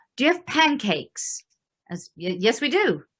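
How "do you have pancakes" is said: terrible put-on British accent, higher-pitched. Retelling what a customer at the table asked, in a terrible British accent. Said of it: "I do a terrible British accent".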